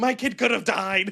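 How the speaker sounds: mock, high, drawn-out screaming. Retelling a mother after a car bump, imitating a woman screaming. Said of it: "screaming at him".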